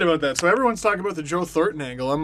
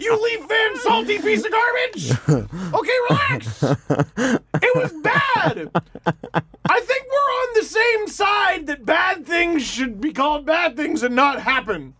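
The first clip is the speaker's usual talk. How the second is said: high, shouted mock furious rant. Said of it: "everyone's like".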